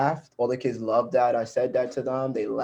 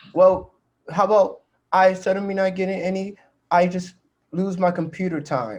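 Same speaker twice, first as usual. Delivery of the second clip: put-on high, distant-sounding smart-aleck kid voice. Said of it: "he tried to switch it up and go".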